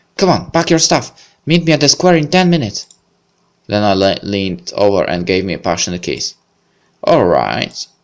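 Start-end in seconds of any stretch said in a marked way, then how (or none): 0.2-2.9 bright, happy, cheerful, high-pitched calling out. The narrator voices Lena as she jumps off the bed to dress: cheerful exclamation. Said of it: "She exclaimed cheerfully".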